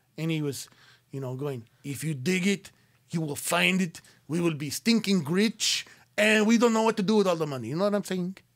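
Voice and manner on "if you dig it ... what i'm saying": put-on Latin American Spanish accent throughout.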